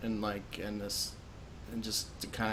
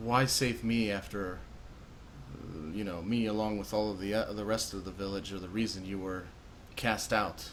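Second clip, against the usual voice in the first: plain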